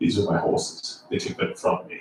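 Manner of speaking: hushed, breathy whisper in a dramatic British accent. Mocking the British accents in foreign-set films, quoting Gladiator: Russell Crowe British-accent impression. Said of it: "why do they always use like a British accent?".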